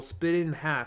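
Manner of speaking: plain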